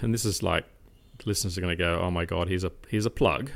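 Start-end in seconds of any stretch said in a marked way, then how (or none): none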